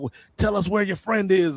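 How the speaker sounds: bullying, aggressive, demanding, pushing-hard voice. Retelling a tv scene, voicing a security chief beating someone: imitating an aggressive enforcer. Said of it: "the one really aggressive".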